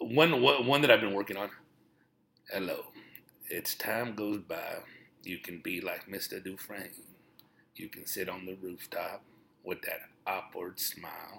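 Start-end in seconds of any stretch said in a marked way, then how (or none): 2.5-6.9 deep put-on narrator voice, lower and quieter. Doing impressions: Morgan Freeman impression, deeper voice. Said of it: "go with a deeper voice".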